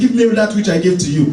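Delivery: ordinary delivery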